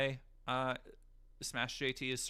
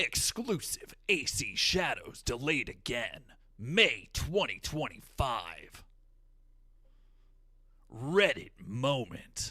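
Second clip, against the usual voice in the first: booming voice, slow and swooping; 7 dB louder than usual. Reading dumb video titles aloud, the speaker does a goofy Halo announcer voice. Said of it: "goofy ass voices for these dumbass titles, like uh, the Halo announcer".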